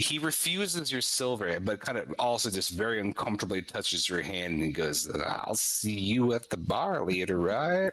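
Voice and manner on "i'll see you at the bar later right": playful, sly, mischievous tone. Narrating a scene, the speaker voices a man refusing your silver, mischievous and sly. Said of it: "this kind of like mischievous wink grin thing".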